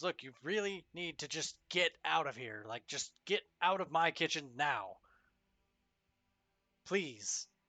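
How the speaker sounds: frightened voice, very scared, almost panicking. Game narrator voicing a kitchen worker as the player reaches to shake his hand, very scared. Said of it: "in a very scared, almost panicked voice".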